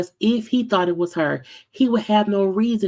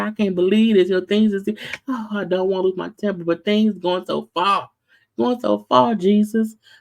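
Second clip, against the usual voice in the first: put-on tearful sobbing, talking through crying. Retelling what a man said in the car, imitating someone crying. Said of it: "he's also in the car crying".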